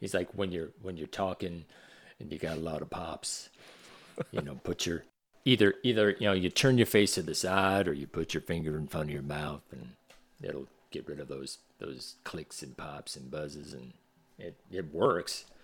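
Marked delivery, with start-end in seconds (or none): 0.3-13.7 put-on low Southern-accented voice. Retelling a teacher's advice on mic pops: imitating Ben's low Southern voice. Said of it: "a really low Southern voice".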